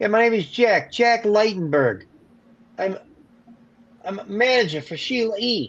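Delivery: put-on thick New York accent, pitched way up. Retell the manager introducing himself on the phone, in Jack Leitenberg's thick New York accent. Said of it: "N thick New York accent".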